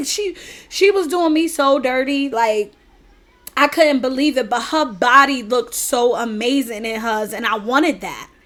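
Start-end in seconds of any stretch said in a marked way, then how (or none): none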